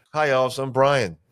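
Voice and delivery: plain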